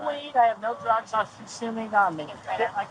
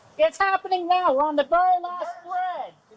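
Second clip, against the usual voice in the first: shouting, higher; 9 semitones higher than usual. Talking to officers while being put in custody: yelling. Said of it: "Why are you yelling?".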